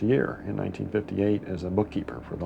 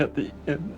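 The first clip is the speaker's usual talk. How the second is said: high, sobbing voice, crying through the words; 7 semitones higher than usual. Speaker recounting a memory of their mother: sobbing.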